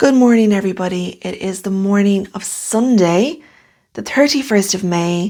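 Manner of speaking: slightly hoarse, croaky, casual speaking voice. Greeting everybody on Sunday morning after staying up late beading: slightly croaky voice. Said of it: "please excuse my slightly croaky voice".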